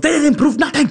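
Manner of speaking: put-on high-pitched, German-accented outburst.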